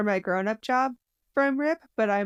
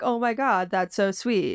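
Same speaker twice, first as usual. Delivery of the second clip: acted romantic gushing, swooning. Retelling own first reaction to a book line, imitating own romantic gushing. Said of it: "The romantic in me was like".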